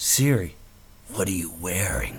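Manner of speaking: creepy guy voice, very low murmur. Giving an example question to ask Siri, in a creepy van guy voice. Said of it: "say this one with your best creepy".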